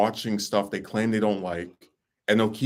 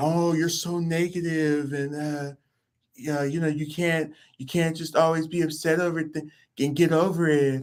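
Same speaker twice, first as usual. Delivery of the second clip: mocking stupid-sounding voice, slower; 7 semitones higher than usual. Quoting an angry woman who scolded the speaker: imitating her stupid voice. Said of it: "In her stupid voice".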